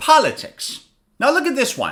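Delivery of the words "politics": politics, first syllable po- said louder. Speaker teaching pronunciation says the word for learners: stress on first syllable of Politics. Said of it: "on the first syllable, I say it louder".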